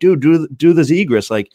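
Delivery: high-pitched, drawn-out hollering yell. Retelling calling out to kids at practice: imitating his own yell. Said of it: "I'm yelling".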